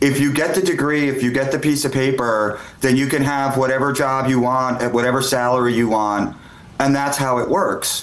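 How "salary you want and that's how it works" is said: normal talking voice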